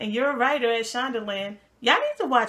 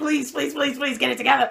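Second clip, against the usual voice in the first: imitated begging, pleading voice, faster. Recalling a man's plea to Sally, the speaker imitates someone begging. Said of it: "remember when he was begging Sally".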